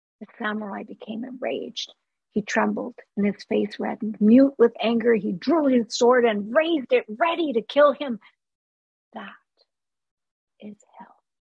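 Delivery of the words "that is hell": gentle, soft, much quieter. A monk speaks to a samurai who has raised his sword, softly. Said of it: "the monk told him softly".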